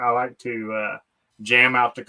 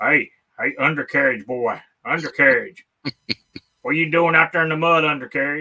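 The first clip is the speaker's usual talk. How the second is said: fake, taunting rural American accent; 3 semitones higher, 3 dB louder than usual. Talking trash to others about getting stuck in the mud, in a put-on redneck voice. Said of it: "I just started talking all in all redneck voice".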